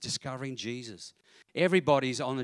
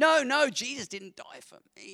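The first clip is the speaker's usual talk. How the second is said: put-on very posh English accent, much higher; 12 semitones higher, 4 dB louder than usual. Retelling a repeated conversation with a woman who stayed with them, imitating Sarah's posh English accent. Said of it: "Very posh English accent".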